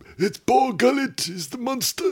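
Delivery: very high-pitched character voice. Showing how the character talks: Saw Gerrera voice. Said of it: "That's whose voice I'm doing".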